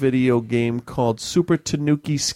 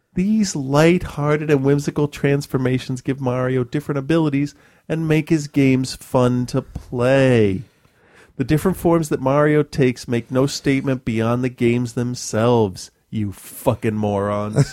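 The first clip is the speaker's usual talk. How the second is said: ordinary talk, nothing marked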